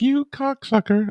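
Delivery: regal, queenly voice.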